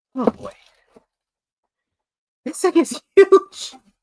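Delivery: excited voice leaping up an octave, very high. Reacting to a Cobra Airborne Division box, voice going way up. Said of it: "Your voice just went up".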